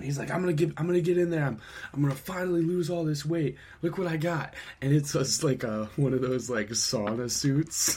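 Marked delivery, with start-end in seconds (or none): 0.3-4.5 mock male yelling, much higher. Retelling how a man across the street shouted about his new purchase, retelling a yell. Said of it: "Like yelling across the street".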